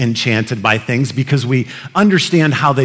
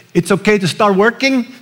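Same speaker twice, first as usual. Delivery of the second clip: horrible, pitched-up put-on Spanish-speaking accent; 8 semitones higher than usual.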